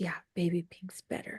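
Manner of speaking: whisper. Retelling what another woman said to her, in a retold whisper. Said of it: "why are you whispering?".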